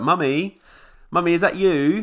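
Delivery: put-on very high, loud, confrontational child's voice. Retelling a film scene where the kid comes out: imitating a confrontational kid. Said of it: "comes out really, like, confrontationally".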